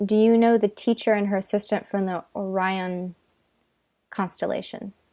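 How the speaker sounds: ordinary delivery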